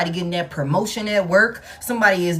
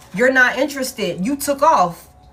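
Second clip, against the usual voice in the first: normal talking voice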